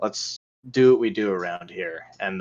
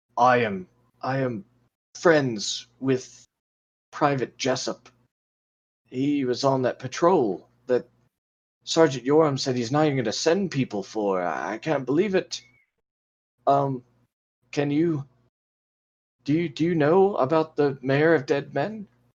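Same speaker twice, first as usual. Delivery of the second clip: worried, anxious, much higher pitch; 5 semitones higher than usual. Game master voicing a half-orc stonemason approaching the party, worried. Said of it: "a very worried expression on her face".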